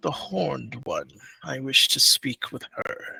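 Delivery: deep, commanding, authoritative voice. Voicing a mysterious figure speaking to the players: deep commanding voice. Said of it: "a kind of familiar but deep kind of commanding voice".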